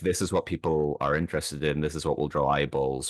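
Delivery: ordinary delivery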